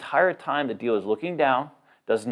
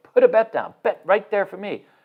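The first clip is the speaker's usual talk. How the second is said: angry, demanding tone, pitched up; 6 semitones higher, 3 dB louder than usual. Retelling what the dealer told a player at the table, imitating the dealer's angry voice. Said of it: "just with this angry voice".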